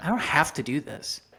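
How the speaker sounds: ordinary delivery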